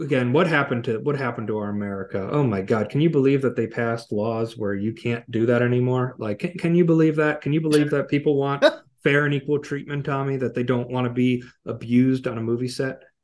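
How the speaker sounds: ordinary talk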